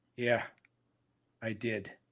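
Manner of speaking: put-on short, irritated, annoyed, pissed-off tone. Retelling a pitcher's answer about being taken out: imitating Logan Webb's annoyed tone. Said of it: "And he said, just like this".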